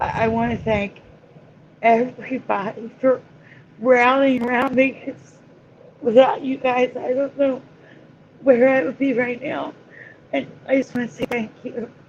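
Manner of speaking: halting voice breaking while holding back tears. Thanking everyone for rallying around him, the speaker is holding back tears. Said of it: "I'm fighting it right now".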